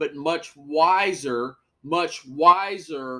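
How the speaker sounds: slow, heavily stressed wiser, emphatic.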